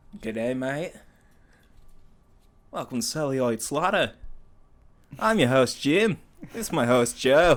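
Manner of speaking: loud, showy, put-on Australian accent. Imagining being Australian while introducing the show, put-on Australian accent. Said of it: "if we were Australian, that'd be badass. We'd have the coolest voices".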